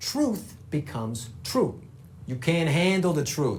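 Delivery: strong Dutch accent. Demonstrating how a Dutch person might sound, in a heavy Dutch accent. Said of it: "a heavily Dutch accent".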